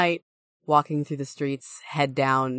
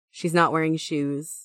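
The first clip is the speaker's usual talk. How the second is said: usual speaking voice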